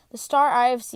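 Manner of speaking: ordinary delivery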